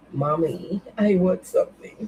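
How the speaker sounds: put-on voice of a dog. Imagining what the dog wants while it stares: voicing her dog. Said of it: "my dog is looking at me like".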